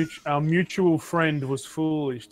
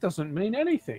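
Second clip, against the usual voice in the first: sardonic, higher pitch; 6 semitones higher than usual. Voicing a character dismissing a note as evidence: sarcastic. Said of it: "She seems to be very sarcastic".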